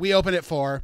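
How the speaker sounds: put-on cold, curt dismissal. Speaker retelling what a bartender said, mimicking a cold, rude tone. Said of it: "just very cold and rude".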